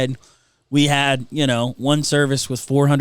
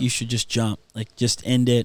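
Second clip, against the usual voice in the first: imitated whisper; 3 semitones lower, 4 dB quieter than usual. Retelling what the enemy whispered on a highway overpass: imitating a whisper. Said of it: "the enemy starts whispering".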